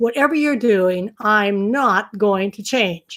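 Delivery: firm, unbudging, emphatic, insistent tone. Imitating people who refuse to change: imitating an emphatic voice. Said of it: "they usually say it with this emphatic voice".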